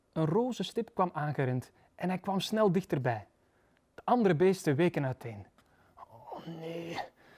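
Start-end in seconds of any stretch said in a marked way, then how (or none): 5.9-6.9 sighing, much quieter. Narrator reading the Lord's reply to a creature arriving late, sighing. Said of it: "zuchtte onze lieve heer".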